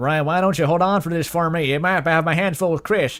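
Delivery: put-on cowboy accent. Trying out voices for Asriel in a fic, asked for a cowboy accent. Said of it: "you want a cowboy accent?".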